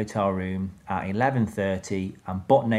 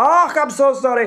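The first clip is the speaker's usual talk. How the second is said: put-on very high, very slow, very loud Scottish accent; 10 dB louder than usual. Retelling a chambermaid walking in on him: imitating a scottish reaction. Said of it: "the most Scottish reaction I've ever heard".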